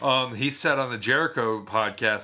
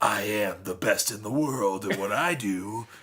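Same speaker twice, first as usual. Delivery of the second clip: villainous comic-book, wrestling-promo style delivery. Complaining about how a wrestler talks in his promos, imitating comic-book-villain talk. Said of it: "he talks like a comic book villain".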